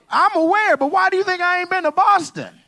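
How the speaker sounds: voice shooting up very high. Pushing back when asked if he's been to Boston, voice rising high. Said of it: "why your voice going up to her height?".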